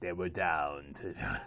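low, slow film narrator voice. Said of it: "in my best John Facenda voice".

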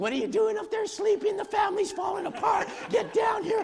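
very high-pitched screaming. Speaker re-enacts their mom screaming at their dad upstairs; retelling mom's screaming. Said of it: "My mom is screaming".

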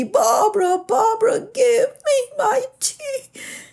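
put-on very high, loud, distressed crying wail. Retelling the sister calling again, more upset: imitating a louder distressed call. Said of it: "cause her to call out more loudly".

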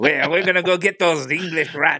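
fake French accent, laid on, high-pitched. Telling of a French family setting out to conquer England: Monty Python fake French voice. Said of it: "Now I'm doing a Monty Python voice, fake French".

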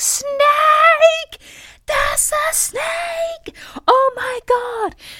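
very high, very slow, full-lung drawn-out shriek. Retelling spotting a snake near Tom's foot: retelling a scream. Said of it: "I scream at the top of my lungs".

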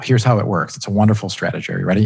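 facetious, sarcastic tone. Explaining an overage pricing scheme to a listener: facetious. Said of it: "I'm being facetious".

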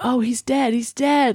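high-pitched gamer-style yelling. Recounting a 911 call where a man yells as in a video game: retelling a man's yelling. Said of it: "he's yelling all this stuff".

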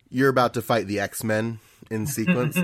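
usual speaking voice

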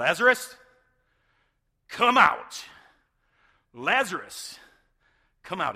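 very loud, swooping, drawn-out shout. Retelling how a man was called to come out, acting out a loud shout. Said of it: "Jesus called out in a loud voice".

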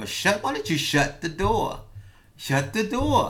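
mild half-yell, pitched high. Retelling yelling at a man who wanted to move in: retelling own yell. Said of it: "I'm yelling at him".

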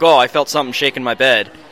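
ordinary talk

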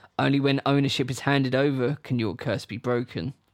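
usual speaking voice

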